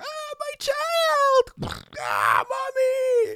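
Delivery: very high, shrill, swooping, squawking goose scream. Acting out people screaming in a raging fire, goose-like screaming. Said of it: "That was my goose".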